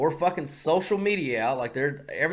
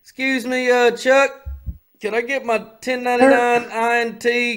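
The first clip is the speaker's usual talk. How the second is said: thick Texan drawl, higher and louder; 7 semitones higher, 7 dB louder than usual. Acting out asking Chuck for a tax form: heavy Texas accent. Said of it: "I would turn up my Texas accent".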